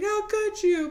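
high, distressed cartoon-hero voice. Retelling Hercules learning Meg worked for Hades: upset Hercules impression. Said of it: "That's a great Hercules impression I just did".

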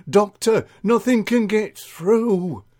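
chatty, confiding, juicy gossip tone, pitched high. Mavis tells Edie what she said to the doctor, gossipy Mavis voice.

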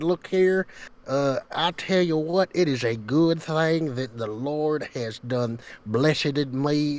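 put-on drawn-out Southern accent. Retelling a call made as a southern religious person: imitating a southern religious person. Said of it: "I sounded just like this".

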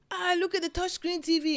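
very high, thrilled, excited gush. Retelling a prank video, quoting the mom: imitating someone excited. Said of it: "She's all excited".

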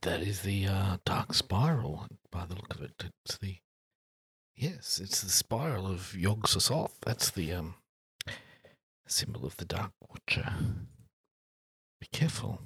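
hushed, whispered voice. Warning Flopsy about the symbol of a dark god, whispering. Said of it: "Are you whispering that?".

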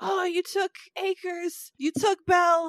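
very high, drawn-out holler. Recapping a scene where a man on the wheel yells at god, retelling a yell. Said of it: "he's yelling at God".

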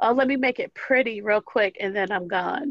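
ordinary talk, nothing marked

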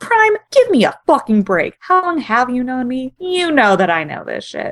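put-on angry voice, loud. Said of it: "only very loudly and angrily".

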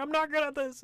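very high, loud wail, bursting into tears. Retelling a clumsy character's meltdown after wrecking a garden, mock crying. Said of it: "starts bursting in tears crying".

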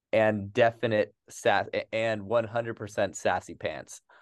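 ordinary talk

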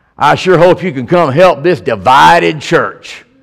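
rough, coarse woman's voice. The speaker retells a call from a lady at a church in Mobile: imitating a rough voice. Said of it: "kind of a rough voice".

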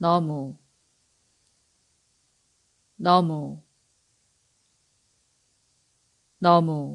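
너무 said three times at a natural, everyday pace. Teaching Korean, repeating a word three times, faster.

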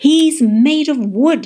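very loud, very slow, booming, drawn-out bellow. Narrator reads someone calling down from the crow's nest, bellowed. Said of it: "Jessie bellowed down from the crow's nest".

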